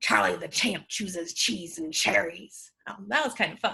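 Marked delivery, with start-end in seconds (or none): 0.0-2.7 talkative, low, rough arr-style pirate voice. Saying a tongue twister for listeners to repeat, the speaker uses a chatty pirate voice. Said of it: "let's say it like a chatty pirate".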